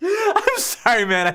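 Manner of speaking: very high voice breaking up with held-in laughter. Introducing a guest in a parody interview, the host breaks, fighting back laughter. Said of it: "I can't do this with a straight face".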